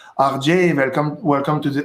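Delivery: English words spoken with a French accent. Speaker imitating how someone from France would greet them in English, French accent. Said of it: "Someone from France talking to you would be like".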